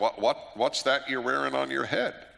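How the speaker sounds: put-on heavy, broad, very thick Southern accent. Retelling what the girl behind the counter asked his son, thick southern accent. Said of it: "in a very thick Southern accent".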